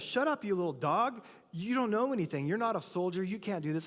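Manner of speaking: put-on irritated, angry tone. Retelling how David's brothers scold him: imitating angry brothers. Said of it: "his brothers get mad at him".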